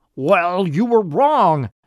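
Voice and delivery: high, loud, yelled shouting. Narrator reads an old man confronting two visitors: shouting. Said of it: "shouted the old man".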